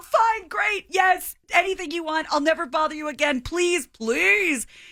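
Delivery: high-pitched, desperate, very upset pleading. Retelling begging an ex for a big favor: imitating own very upset pleading. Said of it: "So very, very upset".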